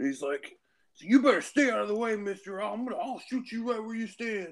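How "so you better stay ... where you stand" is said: put-on drunk man voice, much higher pitch. Telling a story about a drunk guy who ran into them, imitating a drunk man. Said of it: "this drunk guy strumpled".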